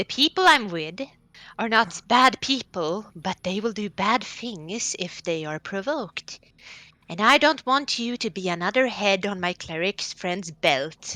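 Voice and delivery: whispering in a character voice. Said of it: "kind of whisper to him".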